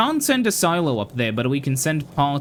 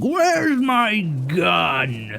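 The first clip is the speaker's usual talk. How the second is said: screaming in a hulking goblin-man voice; 4 semitones higher than usual. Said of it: "a guy just screaming".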